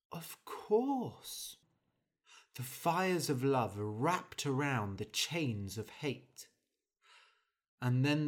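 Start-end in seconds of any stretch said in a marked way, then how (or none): 0.1-1.5 honeyed, sugary, sweet voice with lifted pitch. Narrator reading the prince's reply to Henry, sweetly, with a smile. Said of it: "The prince smiled sweetly".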